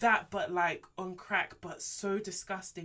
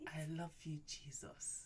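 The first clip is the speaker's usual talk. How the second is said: put-on pillow-talk voice, lower and quieter; 4 semitones lower, 15 dB quieter than usual. Retelling how he led her in prayer: imitating a pillow-talk voice. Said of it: "that voice guys put on at night when you're trying to, like, do pillow talk".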